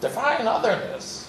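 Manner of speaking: snide, sarcastic tone. Telling a story about a panel, quoting another panelist, mock-sarcastic question. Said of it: "in a sarcastic voice says".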